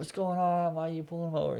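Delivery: high-pitched, upset screaming and shouting. Recounting family outside the house questioning a police stop, retelling people screaming. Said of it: "Like they're all screaming".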